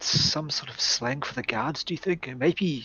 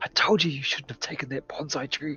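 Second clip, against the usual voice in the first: quiet mumble under the breath. Voicing a character's remark to another player, muttered under his breath. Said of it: "under his breath".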